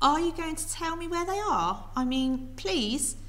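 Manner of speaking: put-on friendly tone. Narrator voicing a character asking an old woman, in his best friendly voice. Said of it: "putting on his best friendly voice".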